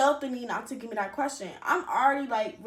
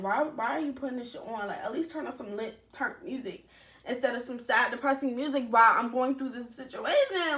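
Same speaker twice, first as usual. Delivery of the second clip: plain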